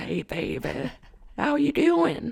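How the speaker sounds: slightly high-pitched, raspy smoker's voice. Imitating a TikTok personality greeting someone: imitating Sue Dillon. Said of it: "She's like".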